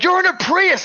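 very high, shrill yell, pitched way up. Recounting yelling at another driver in a prius, retelling the own yell. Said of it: "I just started yelling like".

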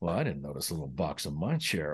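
very low, hushed mumble under the breath. Showing how the line should have been said: under the breath. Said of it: "it looked kinda under the breath like that".

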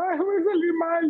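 very high, tearful crying lament. Retelling how someone cries after scoring a hundred: imitating someone crying. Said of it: "pasa llorando toda la mañana diciendo".

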